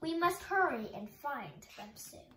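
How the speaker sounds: ordinary delivery, nothing marked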